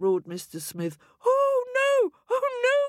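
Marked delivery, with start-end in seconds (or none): 1.2-2.9 very high, very slow, drawn-out crying out. Narrating a story, voice the wife reacting to her husband's roar: cried out. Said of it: "cried Mrs. Smith".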